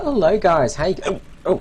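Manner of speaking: very high, loud voice broken by hiccups. Greeting viewers at the start of a battle replay video, with the hiccups. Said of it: "I have the hiccups at the moment".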